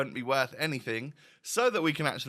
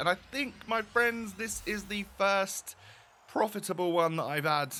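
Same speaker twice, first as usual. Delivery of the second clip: pitched-up voice cracking mid-sentence; 8 semitones higher than usual. Opening the day's preview pack for viewers; voice crack. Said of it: "little voice crack there in the moment".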